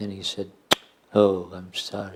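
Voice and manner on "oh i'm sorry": hollow, mocking, insincere sarcastic tone. Retelling how he mimicked her apology: imitating a mocking imitation of insincerity. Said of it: "did an imitation of my insincerity".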